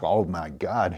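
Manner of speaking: put-on laughter. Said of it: "And I start laughing".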